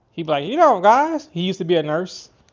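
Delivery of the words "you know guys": put-on Tennessee accent, very high, very loud. Imitating a catfishing YouTuber from Tennessee: imitating Justin's Tennessee accent. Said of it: "he got that accent. He's from Tennessee".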